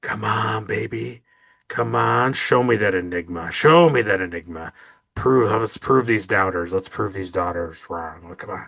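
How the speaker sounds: put-on mutter under the breath. Describing what the commander keeps saying, retelling muttering under breath. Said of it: "saying under his breath".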